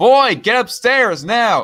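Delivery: put-on stern shout, loud and very high. Retelling a TV show scene where one character orders another upstairs: retelling a yell. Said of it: "just comes stomping into the room and just yells".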